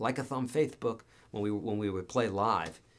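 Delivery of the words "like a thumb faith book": put-on lisp. Retelling what a bandmate with a lisp said on stage: imitating Scott's lisp. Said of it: "he had a little bit of a, of a speech impediment".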